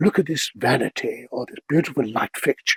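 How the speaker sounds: put-on posh, distinguished British narrator accent. Showing how they narrated house tours, in a David Attenborough-style British accent. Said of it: "I could do this pretend British accent".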